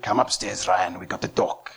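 heavy put-on Afrikaans accent. Act out your dad calling you upstairs after trouble with the police, in dad's strong Afrikaans accent. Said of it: "he put on a strong Afrikaans accent".

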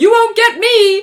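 shrill, very high, very loud defiant yell. Retelling how he evaded everybody on the bridge, retelling a shout. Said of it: "And shouts".

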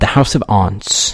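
British accent and pronunciation. Saying a story title, trying a British accent. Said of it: "pronounce that in a British accent".

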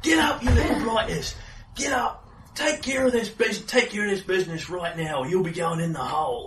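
angry yelling. Narrating a scene, the storyteller voices Hookshanks at the sleepers, Hookshanks shouting angrily. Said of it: "Hookshanks was shouting at them".

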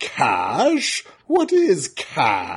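very slow, drawn-out character voice with swooping pitch. Recreating the voice they once did for a character: Impossible Man voice. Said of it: "I did a voice for the Impossible Man".

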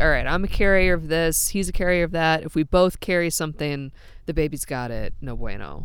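ordinary talk, nothing marked

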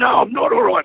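very high, screamed cry. Retelling a man screaming his answer a foot from his face: retelling a scream. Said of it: "He's screaming".

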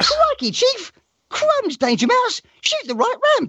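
very high, swooping cartoon sidekick voice. Asked to do Danger Mouse voices for a game, in a Danger Mouse cartoon voice. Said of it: "can you do like Danger Mouse voices instead?".

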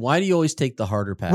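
ordinary talk

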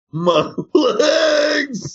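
screaming in pain. Explaining what screaming about a body part means, screaming in pain. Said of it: "If you're screaming".

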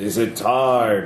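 rumbling voice with slow, drawn-out timing. As game master, voicing something rumbling up from a lit pit, in a booming voice. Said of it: "And then a booming voice".

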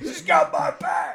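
loud, rough, high-pitched soldier yell. Showing how they scream about Katana in front of people, in a yelling Rick Flag voice. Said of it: "I will do the Rick Flag voice where I just like yell with that voice loudly".

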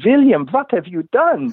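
put-on Norwegian-accented, pitched very high. Retelling what the mentor said on arriving in the morning: norwegian accent. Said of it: "in his wonderful Norwegian accent".

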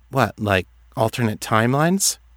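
plain reading voice

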